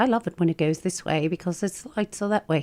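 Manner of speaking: put-on proper British accent. Quoting a car-service driver from years ago, proper British accent. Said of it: "He was this little tiny British".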